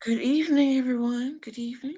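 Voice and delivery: intimate bedroom voice. Greeting everyone as a call begins: pillow talk voice. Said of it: "she has that pillow talk voice on".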